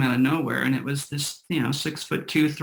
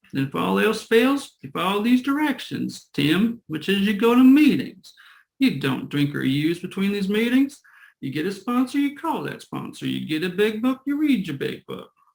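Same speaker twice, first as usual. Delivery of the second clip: put-on Southern accent, higher pitch; 5 semitones higher than usual. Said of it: "he was from somewhere in the South".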